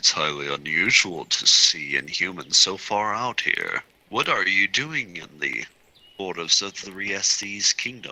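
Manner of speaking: low, deep-pitched voice. Narrating the scene, voicing the unseen stranger questioning the group, deep voice. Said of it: "you hear hear a deep voice say".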